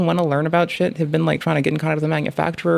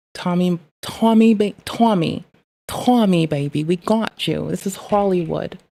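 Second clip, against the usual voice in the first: slow, clumsy, put-on Hollywood accent; 2 semitones higher than usual. Calling out to Tommy, saying this is Hollywood: put-on Hollywood accent. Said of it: "my Hollywood accent does not fucking flow".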